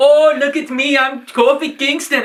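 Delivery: put-on very high-pitched, loud, slow speech with Jamaican accent. Retelling a time machine skit from Monday Night Raw: Jamaican accent. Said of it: "starting doing the Jamaican accent".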